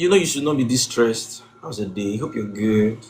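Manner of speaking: dropped very deep, spoken softly. Describing a Netflix movie scene, acting out Lee in his deep voice. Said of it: "using his deep voice".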